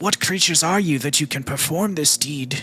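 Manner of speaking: tired, pained breathing. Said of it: "fatigued breathing of one no longer mortally wounded".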